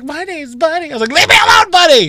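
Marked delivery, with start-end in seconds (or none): 0.0-0.9 man's voice set very high. Retelling a man who kept introducing himself: high-pitched Buddy voice. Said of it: "he had like a high-pitched voice like".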